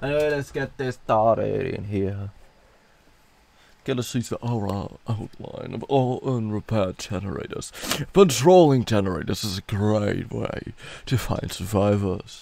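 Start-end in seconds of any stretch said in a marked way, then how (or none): 3.8-12.4 put-on game-narrator reading voice. Reading game tips aloud to the audience, in a narrator voice. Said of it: "my narrate narrator voice".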